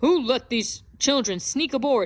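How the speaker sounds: loud, severe, stern, commanding voice. Narrator reads the commander-in-chief turning to the rowers, in a stern voice. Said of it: "he asked in a stern voice".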